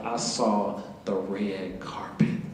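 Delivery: slow, soft, breathy whisper full of awe.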